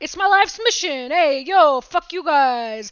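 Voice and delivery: booming, loud, drawn-out put-on New York Italian swagger. Retelling what a rude guy told them when they questioned him, new york italian swag voice. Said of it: "the closest is that Italian swag".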